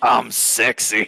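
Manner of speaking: rough, scratchy, raspy voice. Retelling how Dale described Jonas's voice, raspy Jonas impression. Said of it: "a raspy voice".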